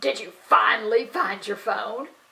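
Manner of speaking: normal talking voice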